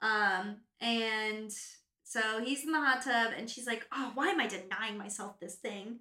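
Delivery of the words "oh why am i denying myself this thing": usual speaking voice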